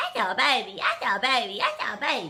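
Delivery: put-on loud, cooing baby-talk voice. Describing how she talks to her dog, the speaker demonstrates her dog-talk voice. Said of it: "we all have that dog voice that we have".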